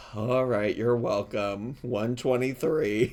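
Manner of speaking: play-acted worn-out, defeated, weary, despairing tone. Imitating a drive-thru worker's reply: imitating a despairing voice. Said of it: "hear the despair in her voice".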